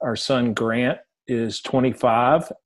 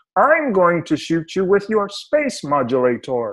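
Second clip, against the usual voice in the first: higher pitch with a sing-song tune; 7 semitones higher than usual. Reminding someone of the Martian on Bugs Bunny, show how he talked in a Bugs Bunny Martian voice. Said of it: "he would talk like this and say".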